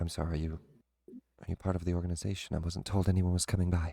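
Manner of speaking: quiet, low, hushed, confidential tone. Narrator voicing a woman speaking to the visitors, in a hushed tone. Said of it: "she gets kind of a, a hushed tone".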